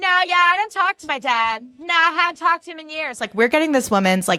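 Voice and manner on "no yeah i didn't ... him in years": very high, loud belted shout. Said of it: "like a Parker Posey character".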